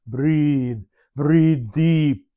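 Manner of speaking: put-on thick Hungarian accent. Recalling what he used to tell you all the time, speak in a heavy Hungarian accent. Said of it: "he had a heavy Hungarian accent, so he would say".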